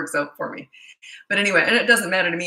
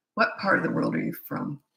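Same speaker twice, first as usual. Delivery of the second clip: raspy, creaky, rough, gravelly speaking voice; 3 dB quieter than usual. Having just apologized for it, the speaker keeps chatting in a gravelly voice. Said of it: "Sorry, I got a gravelly voice right now".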